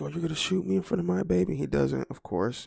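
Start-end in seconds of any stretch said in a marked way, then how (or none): 0.0-1.5 high screamed outburst, confrontational. Describing a video, imitating a father screaming at a cop. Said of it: "he's screaming at the cop".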